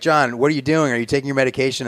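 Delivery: mock panicked, freaking-out voice. Retelling a phone call with mom: imitating mom freaking out. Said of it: "she's, like, freaking out".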